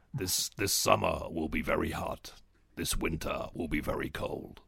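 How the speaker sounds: very low, slow, menacing American trailer voice. Recalling ones they used to love, doing a mock-menacing deep American voice. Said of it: "really deep, menacing American voice".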